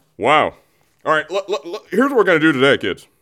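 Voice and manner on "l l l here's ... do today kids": high put-on voice, stammering at the start. Starting the day's show, addressing the kids: Don Cherry impersonation. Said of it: "That was my Don Cherry impersonation".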